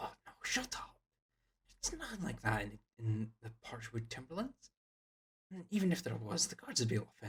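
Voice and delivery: hushed, quiet half-whisper. A game narrator voicing a teenage boy answering his friend's rumor, in a hushed half-whisper. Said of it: "in hushed whispers".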